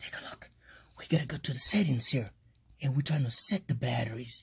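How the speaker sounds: hushed whisper. Showing viewers the charger settings on video, whispering. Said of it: "I'm whispering now".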